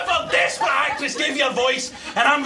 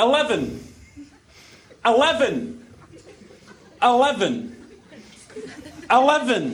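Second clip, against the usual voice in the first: put-on Scottish accent, eleven repeated with swooping pitch; 4 semitones lower than usual. A man repeats a number after being asked to speak slowly and clearly, Scottish accent. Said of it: "keep saying it till I understand Scottish".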